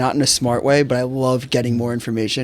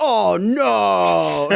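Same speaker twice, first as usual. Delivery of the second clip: mock raspy high scream, long stretched-out "no"; 7 semitones higher than usual. Retelling a gaming roommate screaming during Call of Duty: imitating someone screaming. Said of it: "screaming like".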